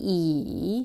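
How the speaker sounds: I with dipping, falling-rising third tone. Giving an example for a tone-spotting quiz, third tone on I. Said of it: "which is third tone of I".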